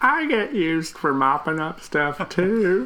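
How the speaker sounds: sad, high, slow, squeaky animated-movie sock voice.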